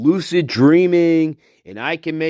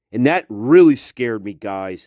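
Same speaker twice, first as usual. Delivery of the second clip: plain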